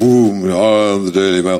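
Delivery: big booming voice, slow. Describing the Daily Mail, the speaker performs it in a booming Daily Mail voice. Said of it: "that's got a big booming voice".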